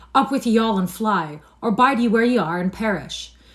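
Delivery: loud, hoarse, barked delivery. Canty rouses his family, hoarsely commanding them all to flee. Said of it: "hoarsely commanded".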